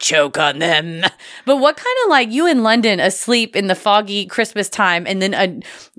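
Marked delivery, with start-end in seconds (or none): 0.0-1.0 spooky, ghoulish, ancient monk voice, intoning. Speaker voices a line from a ghoulish old-timey monk, in his voice. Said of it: "a ghoulish old-timey monk being like".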